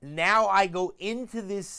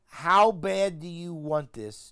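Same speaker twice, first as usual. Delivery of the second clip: ordinary talk, nothing marked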